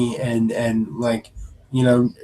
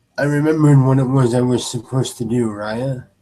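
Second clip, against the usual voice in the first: sorrowful, deeply ashamed voice. Narrating a scene, voicing him as he speaks to Raya: very sad and ashamed. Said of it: "in a very sad and very ashamed voice".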